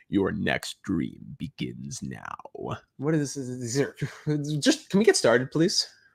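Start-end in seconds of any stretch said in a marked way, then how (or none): 0.1-2.3 deep, slow movie trailer voice. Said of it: "I gotta put my best movie voice on".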